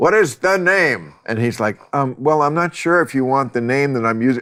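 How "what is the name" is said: high-pitched automated robot machine voice. Recounting a scene from Idiocracy, the speaker does the robot voice. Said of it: "the robot voice is like".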